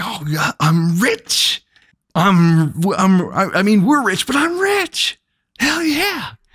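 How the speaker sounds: giddy self-satisfied bragging. Retelling what a newly rich man said: imitating someone riding a high. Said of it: "he's all riding this high".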